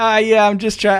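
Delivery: put-on nonchalant voice. Retelling own reply to a neighbour while picking a lock: retelling own nonchalant reply. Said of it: "really nonchalant about it".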